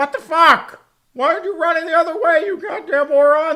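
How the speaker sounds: very high-pitched, loud, outraged, furious yelling. Voicing a player yelling at a teammate who ran the wrong way: imitating a player yelling. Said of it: "the other guy's probably getting yelled at".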